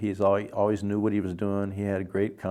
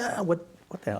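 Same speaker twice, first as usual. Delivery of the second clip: put-on breathy, hushed, angry whispered outburst; 9 semitones higher, 5 dB quieter than usual. Retelling how a composer reacted angrily: imitating someone yelling. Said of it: "He's yelling at me".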